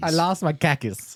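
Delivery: put-on Boston accent. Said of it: "you can do the Boston".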